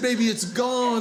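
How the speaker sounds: ordinary delivery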